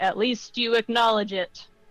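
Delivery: acted-out indignant, affronted, offended tone. Reading out a comment with an indignant tone. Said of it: "with an indignant voice".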